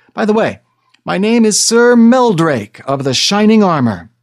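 sudden blurt in one go, high and loud. Melvin, not knowing what to say next to the dragon; blurted. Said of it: "so he finally blurted".

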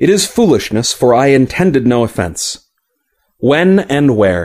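ordinary delivery, nothing marked

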